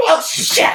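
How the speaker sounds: very high panicked shriek. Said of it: "Then he can go".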